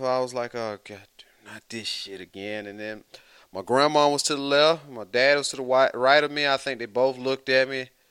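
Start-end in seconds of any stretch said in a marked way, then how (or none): 0.5-2.7 mumbled, muttered under breath, much quieter. Speaker at a funeral, retelling what they said about the preacher: mumbling under breath. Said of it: "I over there mumble under my breath".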